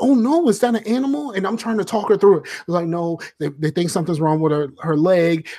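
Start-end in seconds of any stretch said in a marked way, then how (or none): 0.0-1.3 suddenly worried, concerned voice, pitched up. Retelling a phone call where the other woman got instantly concerned: imitating someone concerned. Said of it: "she is instantly concerned".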